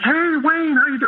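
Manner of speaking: very high, hearty, affable, gregarious tone. Retelling how a former manager greeted the speaker: imitating a gregarious friend. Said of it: "And he's very gregarious".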